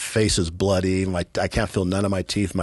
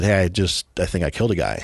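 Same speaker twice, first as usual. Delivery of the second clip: ordinary delivery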